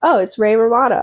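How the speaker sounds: plain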